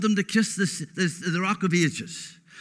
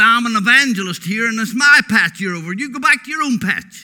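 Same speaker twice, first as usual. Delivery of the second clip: loud put-on American accent on every word; 7 dB louder than usual. Irish speaker retells what an evangelist told him, in a retold american accent. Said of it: "He spoke with American accent".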